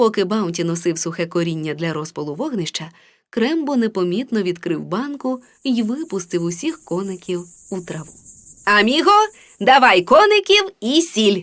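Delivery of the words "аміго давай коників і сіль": raised, commanding small-dog voice calling out. Reading a children's story: the little chihuahua gives his companion an order, commanding. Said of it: "скомандував маленький чихуахуа".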